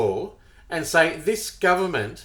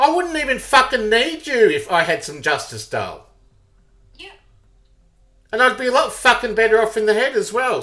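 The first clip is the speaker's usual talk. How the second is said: angry, pissed-off ranting outburst, pitched up; 5 semitones higher, 4 dB louder than usual. Talking to dale and getting angry. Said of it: "I'm getting pissed off now".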